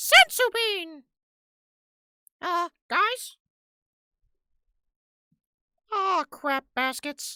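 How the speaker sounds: high, loud cartoon voice, every word stretched. Talking about Krillin from DBZ, the speaker does a Krillin voice. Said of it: "like a deeper voiced Mickey Mouse".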